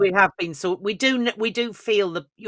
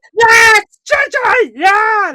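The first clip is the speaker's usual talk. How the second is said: put-on silly puppet voice, much higher; 12 dB louder than usual. Acting out the crowd as a player strides onto the pitch: Muppets voice. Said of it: "like the Muppets. That was me doing the Muppets".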